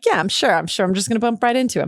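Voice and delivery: mocking, scoffing, disbelieving sarcastic tone. Recalling doubting they'd ever meet someone, retelling own sarcastic remark. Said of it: "I said it sarcastically, like".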